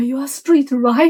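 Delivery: acted, anxious, worried, fast and nervous. Retelling how the guy looked at me tensely, imitating a nervous question. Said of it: "他真的就好紧张的看着我".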